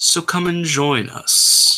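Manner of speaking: long, drawn-out, stretched voice. Voicing a voice heard underneath a sound, greeting guests: very low, drawn voice. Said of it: "A very low, very drawn sort of voice".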